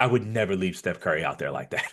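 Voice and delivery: mock disgusted tone. Retelling a player's breakdown of a teammate's defense: imitating a disgusted tone. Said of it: "the disgust in his voice".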